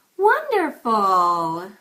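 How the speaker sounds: over-the-top, very loud, swooping sing-song. Demonstrating one of a numbered series of readings, exaggerated. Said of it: "That one sounded exaggerated".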